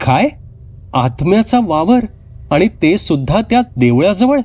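sounding surprised. The narrator answers a tea seller's warning, asking in surprise. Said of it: "मी आश्चर्याने विचारलं".

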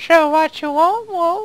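put-on elf voice, very high and loud. Showing the voice used for an elf in last night's fellowship play. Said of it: "I do the voice like this".

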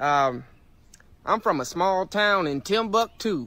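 Texas accent. Urged by others to do an accent, a speaker obliges: texas accent. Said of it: "Texas accent".

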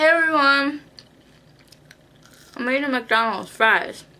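speaking through a mouthful. Greeting viewers while eating fries, talking with mouth full. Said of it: "talk in my mouthful".

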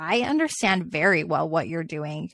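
ordinary delivery

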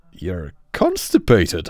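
very loud, swooping, gleeful chortle. Kenny teases Charles, who says he can't go to the basement: gleeful chortle. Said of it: "Kenny chortled gleefully".

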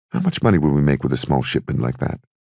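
ordinary talk

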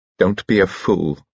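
plain

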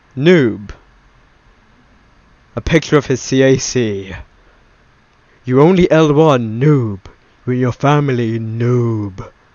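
loud, dramatic reading-aloud delivery. Reading out messages aloud to the audience for dramatic effect. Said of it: "for dramatic effect and that".

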